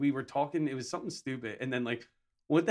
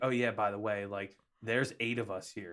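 ordinary talk, nothing marked

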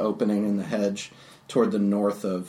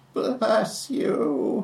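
put-on old woman voice, higher; 13 semitones higher than usual. Voicing the old woman who welcomes the party back: Baba Ganoush voice. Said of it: "a Baba-ish".

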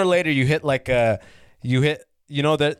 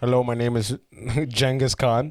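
put-on thick Indian English accent; 3 semitones lower than usual. Describing a man who spoke straight indian english, the speaker imitates him: thick indian english accent. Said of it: "He had like the thickest accent".

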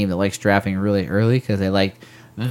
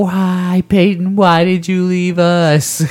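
acted, heartbroken, shrill, very high screaming; 10 semitones higher, 4 dB louder than usual. A fan imagines the coming season, pretend-screaming at the TV. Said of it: "a lot of screaming at my TV like".

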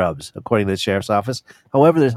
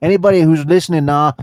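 Pennsylvania Dutch accent, much higher pitch; 3 semitones higher, 3 dB louder than usual. Addressing listeners, showing how people in Pennsylvania talk, Pennsylvania Dutch accent. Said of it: "this is how people in Pennsylvania talk there with the Pennsylvania Dutch accent".

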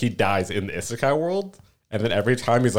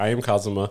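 mock deadpan monotone, flat, dull, zero interest. Retelling an anime character's catchphrase: flat, dull, uninterested voice imitating Kazuma. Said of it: "says with this, like, flat, dull, like, uninterested voice".

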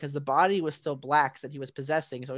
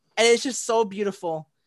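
usual speaking voice

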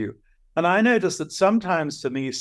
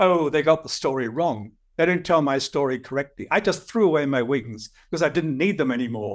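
acted, very proud, boastful, standing-tall tone. Retelling a young producer's reply about his myth: imitating Icarus speaking proudly. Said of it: "says very proudly".

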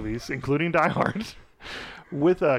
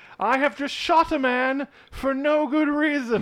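put-on sarcastic British voice, higher pitch; 11 semitones higher than usual. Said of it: "super sarcastic Brit".

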